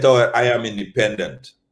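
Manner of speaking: ordinary delivery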